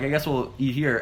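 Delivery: normal talking voice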